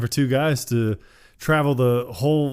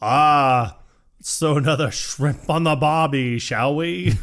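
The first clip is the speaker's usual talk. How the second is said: fake, put-on Australian accent with a long ah. Quoting a remembered movie scene about a lovely accent: put-on australian accent.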